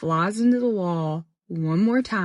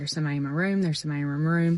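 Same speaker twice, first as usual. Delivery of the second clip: ordinary talk, nothing marked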